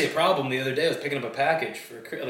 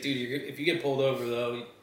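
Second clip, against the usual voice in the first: ordinary talk, nothing marked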